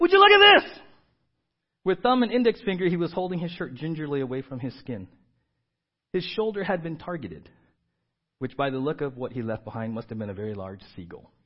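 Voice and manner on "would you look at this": acted upset cry, very high and very loud. Retelling a young man's complaint on a tour: imitating someone upset. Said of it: "He was really up and upset".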